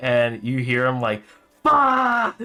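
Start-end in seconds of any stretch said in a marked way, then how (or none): 1.6-2.4 very high, furious, shrill top-of-lungs scream. Voicing an innkeeper cursing in the other room: screaming as loud as possible. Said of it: "screaming as loud as he can".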